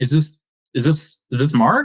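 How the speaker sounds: mock unsure, confused, halting, with repeated starts. Acting out trying to confuse someone while asking for Mark: mock-confused, hesitant. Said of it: "the confused tonality that you you give".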